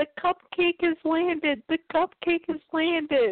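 put-on high yell. Recapping the scene where Scootaloo opens the door, retelling a yell. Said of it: "she yells".

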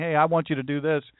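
put-on soft whisper. Describing a call to ministry, imitating God whispering. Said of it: "he starts whispering".

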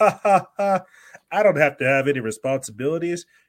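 mock high, loud gleeful laughing through words. Imitating someone the speaker criticizes, mock gleeful laughing. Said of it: "gleefully laugh like".

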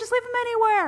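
loud, high-pitched screaming. Retelling trying to get out the door, quoting own past self: retelling a scream. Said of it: "I'm just screaming to get out of the door".

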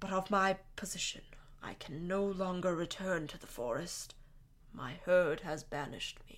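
soft, hollow voice. Recounting a favorite scene from the book, doing a hollow Firenze voice. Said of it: "like, a hollow voice, right? He goes".

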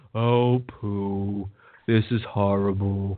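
low, very slow drawl, poo stretched out. Imitating how the character Reed always talks: Eeyore voice. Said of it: "Reed is like Eeyore to me".

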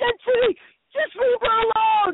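put-on loud yelling with Portuguese accent.

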